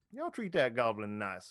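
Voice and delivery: mocking sneer in a swooping sing-song. A narrator voices a guard letting three players out, sneering. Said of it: "He'll say with a sneer".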